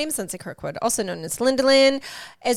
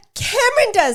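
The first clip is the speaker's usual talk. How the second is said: very high-pitched, shrill yelling; 12 semitones higher, 6 dB louder than usual. Answering who does that during a rant, yelling. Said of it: "Sorry for yelling".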